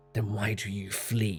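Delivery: flat, cold, soft, emotionless hiss. Reading a story, a figure standing behind the boy speaks: cold emotionless hiss. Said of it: "hissed a cold, emotionless voice".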